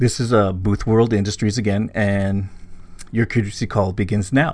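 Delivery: ordinary talk, nothing marked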